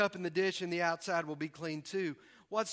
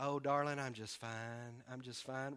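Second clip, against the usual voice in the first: mock Southern accent, lower and quieter; 7 semitones lower, 10 dB quieter than usual. Speaker joking about southern upbringing, acting out a polite reply, in a mock southern accent. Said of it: "it's our southern upbringing".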